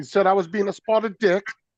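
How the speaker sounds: put-on British accent pitched very high. Quoting what someone said to him; British accent. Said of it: "had that British accent down for a second there".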